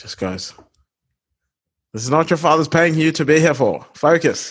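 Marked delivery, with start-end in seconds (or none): 1.9-4.5 put-on Australian accent. Retelling what a teacher said on finding a message, imitating Mr. Pather, Australian accent. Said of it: "I did not have any Australian teachers. I don't know why I spoke like that".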